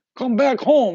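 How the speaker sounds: very loud, high calling shout, dad voice. Retelling the demon calling like a parent: imitating a dad calling his kid home. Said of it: "like a dad trying to tell their kid".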